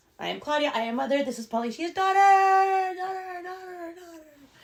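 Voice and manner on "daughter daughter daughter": fake echo repeating the word, high and loud. Introducing a co-host on the podcast, repeating a word: fake echo effect. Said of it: "I'm doing my echo effect now".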